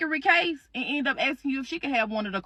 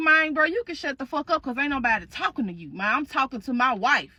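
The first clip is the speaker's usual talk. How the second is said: mock angry outburst. Retelling the ex-husband's outburst at the new partner: imitating an angry ex-husband. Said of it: "He be like".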